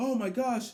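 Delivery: irritated announcer tone, pitched high. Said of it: "announcers are getting annoyed".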